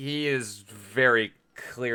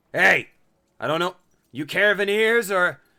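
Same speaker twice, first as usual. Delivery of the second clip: loud, high hollered call, projected as if distant; 7 semitones higher, 6 dB louder than usual. Voicing a man who hails the party's passing cart: calling out to a cart. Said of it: "the man starts to hail your cart".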